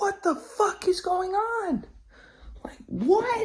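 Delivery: very high, stretched-out, drawn-out shriek. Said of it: "I'm fucking screaming like".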